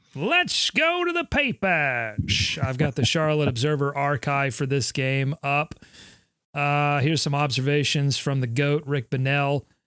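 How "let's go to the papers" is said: put-on old-timey newsboy voice, very high and drawn out. Repeating the other speaker's line before going to the newspaper archive: newsy boy voice. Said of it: "I hear newspaper when you do that voice".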